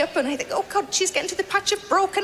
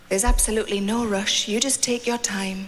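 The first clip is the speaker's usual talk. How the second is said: very low, smooth, velvety, chocolatey tone; 10 semitones lower than usual. Retelling what the masseuse said at the end of a massage: imitating a velvety, chocolatey voice. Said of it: "they always put on their kind of velvety, chocolatey voice".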